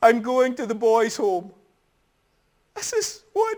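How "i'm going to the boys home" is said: mock tearful voice, words choked with weeping. Retelling what he said while packing his case, imitating someone crying. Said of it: "And he's crying and he says".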